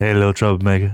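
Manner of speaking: sexy half-whisper with some voice in it. Coaching another speaker on delivering the line, demonstrating a sexy whisper with voice. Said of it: "You gotta do like that whisper".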